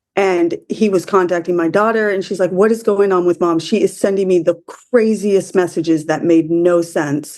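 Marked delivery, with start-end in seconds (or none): none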